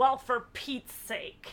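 loud, exasperated, disgusted put-on old lady voice. Retelling how a ninety-year-old woman reacted when woken, in mock disgust. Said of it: "She says in disgust".

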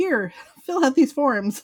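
rapid-fire fast talk. Retelling a doctor's visit, quoting the doctor, imitating a fast-talking doctor. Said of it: "This doctor totally talks like that guy".

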